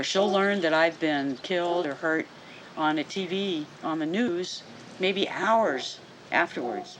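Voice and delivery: ordinary talk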